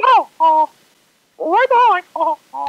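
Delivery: very high, loud, swooping, bouncy cartoon squeak. Showing the kitchen call-out done as Mickey Mouse: Mickey Mouse voice. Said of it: "I do Mickey Mouse".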